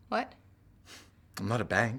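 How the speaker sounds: slow, hesitant delivery. Responding to a demand that the patent go in the other person's name, hesitant.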